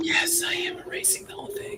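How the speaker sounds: put-on soft, high, unvoiced ASMR-style whisper.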